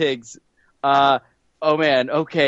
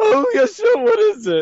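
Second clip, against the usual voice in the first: very high, drawn-out, swooping, sing-song cartoon voice. Pretending to answer a phone call: Snagglepuss voice. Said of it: "Snagglepuss, I got a question for you".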